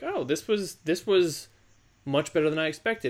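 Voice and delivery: ordinary delivery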